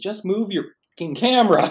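shrill, very loud, furious shouting. Retelling how a man turned around and yelled at the speaker; retelling a yell. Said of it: "turns around and yells at me".

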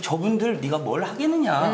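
ordinary delivery

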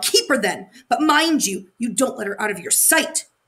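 growled, begrudging give-in. A hag glares at the spoiled girl who begs to keep her; growling. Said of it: "she growled".

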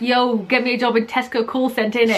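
ordinary talk

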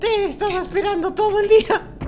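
silly, high-pitched cartoon voice.

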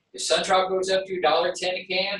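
ordinary delivery

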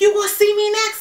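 play-acted very high, shrill screeching scream. Speaker acting out a guy who screamed at them, retelling a scream. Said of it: "is like screaming at me like".

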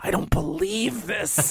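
small, tiny little voice, high and soft. Retelling what was overheard in a video store: imitating a little voice. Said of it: "I could hear this little voice going".

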